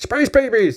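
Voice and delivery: high, really animated voice. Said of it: "in that really animated voice over and over again".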